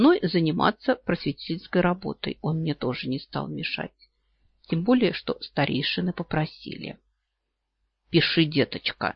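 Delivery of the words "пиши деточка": patronizing, condescending tone. Reading a story, one character addresses the narrator: patronizing. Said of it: "покровительственно говорит мне Ункуц".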